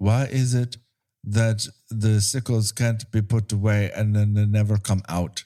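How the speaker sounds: dull, flat, uninflected monotone drone. Retelling a scene where a woman in a car asks a question, softest, most monotone. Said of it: "in the softest, most monotone way".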